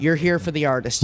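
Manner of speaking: ordinary talk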